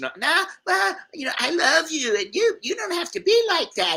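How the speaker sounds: unhinged, very high-pitched, frantic, berserk ranting. Retelling how a woman reacted after being told to leave: imitating a woman going berserk. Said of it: "She goes berserk".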